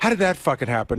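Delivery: normal talking voice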